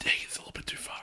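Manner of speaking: high, unvoiced whisper.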